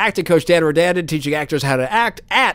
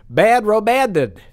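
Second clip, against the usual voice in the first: ordinary talk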